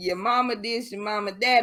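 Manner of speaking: ordinary delivery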